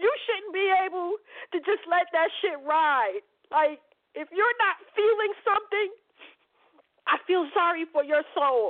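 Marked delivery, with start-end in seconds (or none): 0.0-3.2 upset, tearful, crying. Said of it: "I am upset".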